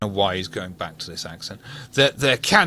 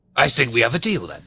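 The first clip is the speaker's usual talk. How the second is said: put-on pirate voice. Voicing a contact closing a deal: pirate voice. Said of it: "I don't know why he's a pirate now!".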